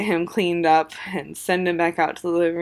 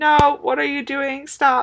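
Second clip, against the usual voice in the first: high, loud, alarmed yell. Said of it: "I am yelling".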